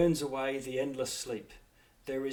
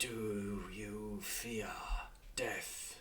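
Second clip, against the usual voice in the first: very slow, very hushed, deep, rumbling dragon whisper; 4 semitones lower, 11 dB quieter than usual. A storyteller voices a dragon whispering into a player's ear, deep rumbling dragon whisper. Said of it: "a dragon's voice, that deep rumbling of a dragon, and it whispers".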